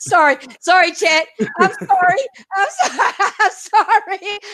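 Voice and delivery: high, slow speech through a laughing fit. Apologizing to another speaker after a prank, laughing while talking. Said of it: "I can't stop laughing now".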